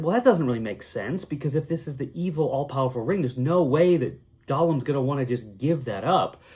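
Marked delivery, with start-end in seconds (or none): none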